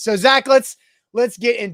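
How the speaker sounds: near-shouting talk.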